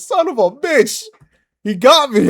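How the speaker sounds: furious scream, high and drawn out. Retelling a friend's reaction to a ghost attack in a game: imitating DPO screaming. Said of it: "D P O screamed, like, he went off".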